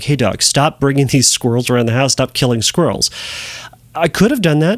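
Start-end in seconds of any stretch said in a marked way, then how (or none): none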